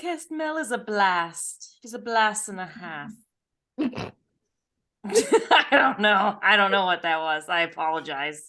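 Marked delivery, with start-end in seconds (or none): 0.0-3.1 British accent full of sass. Switching from a gloomy voice to praise Podcast Mel, in a sassy British voice. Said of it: "your your sassy voice is apparently British".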